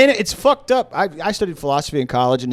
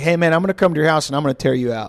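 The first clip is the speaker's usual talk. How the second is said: mock menacing, put-on threatening tone; 2 semitones higher than usual. Speaker retells a prank caller threatening an angry victim, imitating a prank caller's threats. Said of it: "he would be like".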